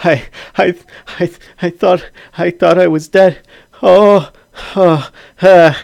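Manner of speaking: very loud, shaking near-tears cry, high, stammering. Acting out how he would speak, crying and shaking. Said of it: "he is probably crying and a little bit like shaking".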